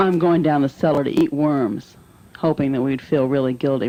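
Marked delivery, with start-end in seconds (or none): none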